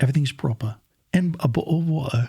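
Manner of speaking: put-on British accent. Asked to say something in a British voice, putting on a British accent. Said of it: "interpret something in like a British voice".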